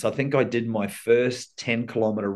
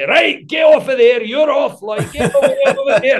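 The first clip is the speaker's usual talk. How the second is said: put-on loud, very high, scolding Scottish accent; 9 dB louder than usual. Retelling a referee grandfather sending players off, imitating a Scottish accent. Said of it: "And he was Scottish, so he'd be like".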